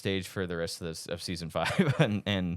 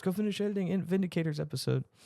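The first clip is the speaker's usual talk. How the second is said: put-on yelling, higher pitched; 10 semitones higher than usual. Retelling leaked footage of Dan Harmon yelling at staff: imitating Dan Harmon yelling. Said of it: "yelling at him".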